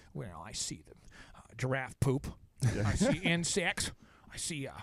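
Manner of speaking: very slow, low turtle voice. Imagining a turtle's answer when asked what it sees: bad turtle impression. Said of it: "this is the worst turtle impression I've ever heard".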